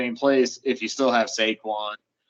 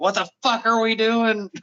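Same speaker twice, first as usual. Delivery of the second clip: high, furious, enraged screaming; 12 semitones higher than usual. Describing a man caught on camera during a game, retelling furious screaming. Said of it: "just screaming at people".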